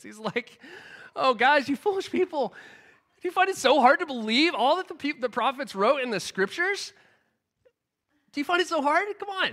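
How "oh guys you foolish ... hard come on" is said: mock joyful, higher, laughter in every word. Acting out how he imagines Jesus chiding his followers: retold with laughter in voice. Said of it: "saying it with laughter in his voice".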